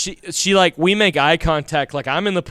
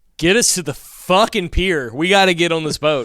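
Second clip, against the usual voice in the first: normal talking voice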